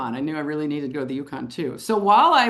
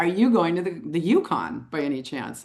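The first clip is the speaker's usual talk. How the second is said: ordinary delivery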